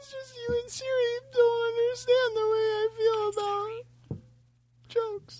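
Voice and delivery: mock crying, fake sobbing. Joking that the others misunderstand his feelings: mock crying. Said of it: "Now he's crying".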